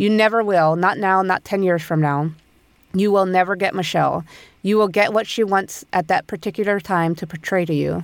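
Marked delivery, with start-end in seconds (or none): none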